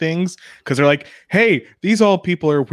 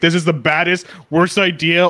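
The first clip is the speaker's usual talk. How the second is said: put-on panicky robot voice. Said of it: "and always panicking".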